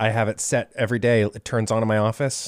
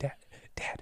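eerie, creepy, breathy whisper. Acting out a creepy wake-up alarm as a joke: mock creepy whisper. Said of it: "You're gonna start whispering".

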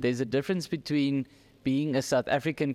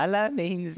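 put-on raised-register voice, higher; 5 semitones higher than usual. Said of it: "my voice went up a register".

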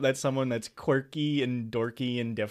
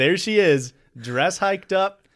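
usual speaking voice

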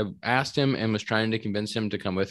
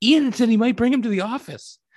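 put-on, very high, loud excited outburst; 12 semitones higher, 5 dB louder than usual. Retelling what Tom said in the office background, imitating Tom's excited voice.

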